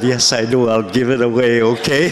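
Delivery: ordinary delivery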